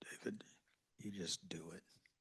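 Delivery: very low, deep, soft voice. Recalling a lesson, the speaker quotes the teacher's answer: Fernando's very low voice. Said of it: "he had a very low voice".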